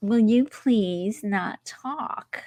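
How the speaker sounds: rude, obnoxious, slow delivery. Retelling a reply from people talking behind at a show: imitating an obnoxious retort. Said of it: "they were obnoxious about it".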